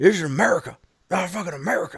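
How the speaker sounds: mock drunk outburst. Retelling what a drunk moviegoer said: imitating a hammered man. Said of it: "But he is fucking hammered".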